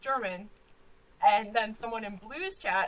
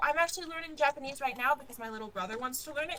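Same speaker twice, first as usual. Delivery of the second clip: excited, rapid rush of words. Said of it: "I'm speaking very quickly".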